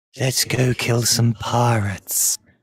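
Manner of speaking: deep, husky, very low woman's voice. Game master voicing a voice Roger hears in his ear: husky feminine voice. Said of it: "A husky, feminine voice said that".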